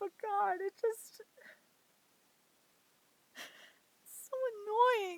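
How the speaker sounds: tearful voice, crying through the words. Venting on your birthday about getting no help from others, crying while talking. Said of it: "Shouldn't be even crying on my birthday".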